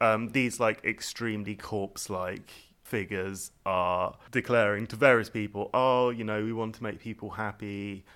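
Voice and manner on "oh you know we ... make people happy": mock depressed tone, louder. Quoting corpse-like figures declaring to people: imitating a depressed voice. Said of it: "and they sound so depressed".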